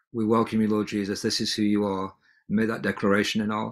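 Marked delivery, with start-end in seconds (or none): none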